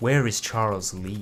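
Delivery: low, quiet, flat, even, stoic, unmoved voice. Trying out a voice for a game character, doing stoic Connor voice. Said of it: "I could probably do a Connor quite easily".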